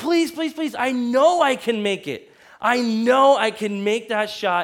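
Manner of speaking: mock earnest, insistent pleading and begging. Telling a story, quoting their past self to her, retelling own pleading. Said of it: "I begged her".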